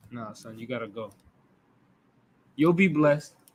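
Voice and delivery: low, hushed voice, holding back tears, steadying himself. Retelling a father telling his son he must go, acting out holding back tears. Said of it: "you gotta hold back tears and be like".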